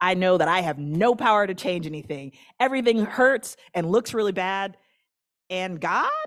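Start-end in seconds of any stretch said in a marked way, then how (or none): 5.5-6.1 rising, question-like pitch on God. Acting out what you keep saying when everything hurts: rising question tone on god. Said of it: "sometimes you say it with a question in your voice".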